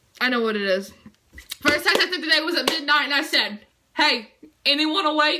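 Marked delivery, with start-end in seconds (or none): none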